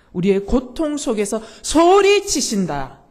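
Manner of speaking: loud shouting voice.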